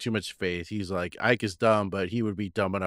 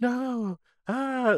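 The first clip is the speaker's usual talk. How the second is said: mock very high, shrill screaming outburst. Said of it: "what does, uh, [name] scream?".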